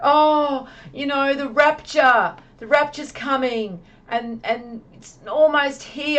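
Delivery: high, bubbly, all-worked-up excited gush. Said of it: "he's, like, all excited".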